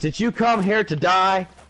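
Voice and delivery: mock drill sergeant yell. Describing a boot camp meme, acting out the drill instructor screaming. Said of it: "he's screaming in his face".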